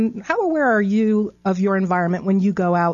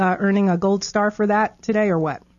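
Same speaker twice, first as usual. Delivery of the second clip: usual speaking voice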